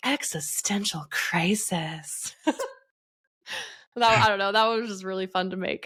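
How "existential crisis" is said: put-on, fake seductive, sexy voice. Creator describing a video she made, imitating its put-on sexy voice. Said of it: "in a sexy voice".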